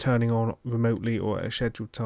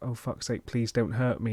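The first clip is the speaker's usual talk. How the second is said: put-on muttering voice. Retelling how Stu mutters under his breath: imitating Stu muttering under his breath. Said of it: "you catch him under his breath, just muttering to himself".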